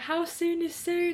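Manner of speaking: high, slow begging tone. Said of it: "I was, like, begging".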